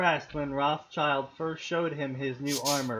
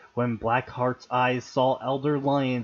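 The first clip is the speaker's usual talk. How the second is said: ordinary delivery, nothing marked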